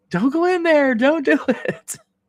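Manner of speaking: acted, very high, frightened, scared yelling. Recalling watching others play a scary game, retelling yelling at the screen. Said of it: "I'm yelling at the screen".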